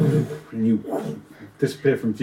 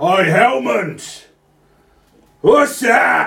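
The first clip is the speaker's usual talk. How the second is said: shouting giant voice, higher and louder; 8 semitones higher, 4 dB louder than usual. Voicing a giant on top who shouts down: giant shouting down. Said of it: "the top there shouts down".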